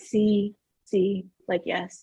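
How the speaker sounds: very slow, soft, dragged-out, unhurried speech. Imitating a man who takes ages to get words out, very slow. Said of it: "it takes him like a good twenty minutes to get it out".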